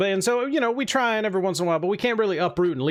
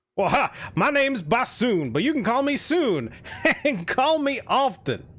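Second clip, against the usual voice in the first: put-on hearty, cheerful, boisterous jolly old man, pitched up; 6 semitones higher than usual. Voicing a man who bursts into the tavern: boisterous jolly older man. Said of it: "very boisterous, jolly-looking man".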